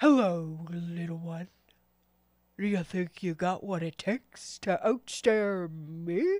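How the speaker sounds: big one-eyed giant monster voice. The game master voices a cyclops bending forward to greet a small adventurer, cyclops monster voice. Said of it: "the cyclops kind of bends forward and goes".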